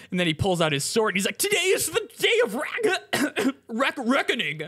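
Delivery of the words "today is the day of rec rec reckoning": voice cracking very high, dragged out very slowly. Retelling a man pulling out his sword, imitating a voice crack. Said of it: "Did your voice just crack there".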